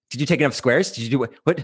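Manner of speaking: worried, fretful, fussing, overworrying voice. Voicing their own ego: imitating an overworrying ego. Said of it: "My ego is a little overworrying".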